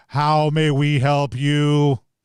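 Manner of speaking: slow, deep rumbling voice as if from the ground. Voicing a giant building head greeting the players: rumbling voice from speakers. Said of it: "you hear kind of rumbling out, uh, from the ground and, and a set of speakers".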